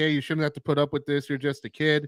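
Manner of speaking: usual speaking voice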